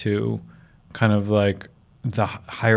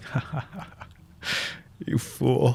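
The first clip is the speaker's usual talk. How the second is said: mock whisper, very slow, breathy, loving chuckle; 2 semitones higher, 6 dB quieter than usual. Describing an inner higher voice answering their worries, retelling a loving laugh. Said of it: "in a loving way. It's just like laughing at a child".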